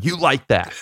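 screaming, taunting voice. Retelling a player yelling at cameras after a big game: imitating Kirk Cousins screaming. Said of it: "he was just screaming at them".

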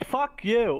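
attempted New York accent. Trading swears in an ad-lib bit, using a put-on new york accent. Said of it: "I was trying to do like New York".

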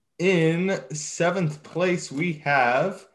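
slow, unhurried, drawn-out, word-by-word delivery. A racing commentator reads out the seventh-place finisher, talking slowly. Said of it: "I'm talking slow because I had to scroll up".

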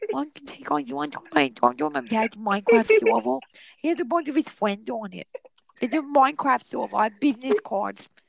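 high, creaky voice with lisped s sounds. Imitating a girl who hands out business cards, soft voice with a lisp. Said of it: "she has like a lisp and she talks so soft".

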